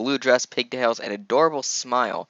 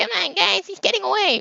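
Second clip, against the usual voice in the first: very high-pitched mocking voice. Reading a script aloud, voicing Buttercup's line: mocking high voice. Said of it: "mocking, high voice".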